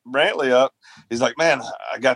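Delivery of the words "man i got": ordinary talk, nothing marked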